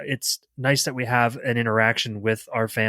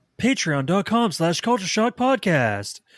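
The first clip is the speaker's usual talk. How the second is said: put-on radio announcer voice, higher; 8 semitones higher than usual. A co-host plugs the show's Patreon, committing to a radio announcer voice. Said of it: "He's committing to that voice".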